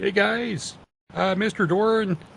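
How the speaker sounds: very high-pitched hollered yell. In a role-playing game, a player's character calls over to the other cart, yelling. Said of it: "I'll yell to the other cart again".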